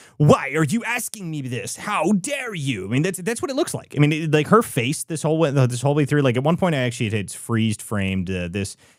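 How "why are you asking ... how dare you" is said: put-on outraged, high, indignant fury. Imitating a woman angry at being asked questions: imitating someone furious. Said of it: "the facial expressions are that of absolute fury".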